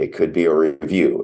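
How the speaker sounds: usual speaking voice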